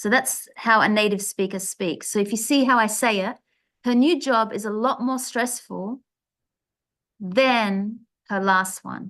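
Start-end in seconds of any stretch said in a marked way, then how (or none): 3.8-9.1 brief pause, then than stressed. Showing how a native speaker says a comparison: pause before stressed than. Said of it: "we also have a pause just before it".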